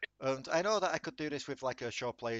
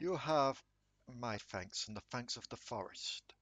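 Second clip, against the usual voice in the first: loud, booming yet comforting, reassuring voice; 3 dB quieter than usual. Narrator voices a giant tree addressing the group, loud booming comforting voice. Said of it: "A loud, booming yet comforting voice".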